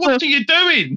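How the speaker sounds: acted-out, shrill, very high screaming yell. Retelling reacting to a game's characters: imitating screaming at the screen. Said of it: "screaming at the screen".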